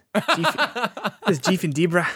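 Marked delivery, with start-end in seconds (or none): 1.4-2.1 put-on Kiwi, New Zealand-style accent. Imagining the kiwi birds' names jeff and debra in a new zealand accent. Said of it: "imagine that in a New Zealand accent".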